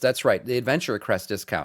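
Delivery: ordinary talk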